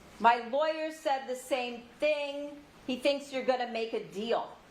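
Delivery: ordinary delivery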